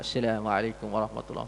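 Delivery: very quiet, faint, barely audible murmur. Describing a prayer leader whose closing salam nobody behind hears: very soft, faint salam. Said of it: "salam slow sangat".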